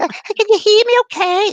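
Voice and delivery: very high, loud, down-to-earth Scottish lilt. Retelling what a Scottish lady said on a séance tape: imitating Mary's Scottish accent. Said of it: "but I gotta do it".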